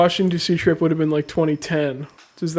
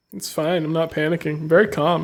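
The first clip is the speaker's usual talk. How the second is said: ordinary talk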